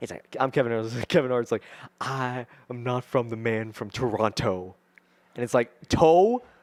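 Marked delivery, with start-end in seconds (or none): 2.0-4.8 slower delivery with clearly enunciated t. Acting out Kevin Hart saying where he is not from, Kevin Hart voice, enunciating Toronto's second T. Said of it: "They enunciated the T, the second T".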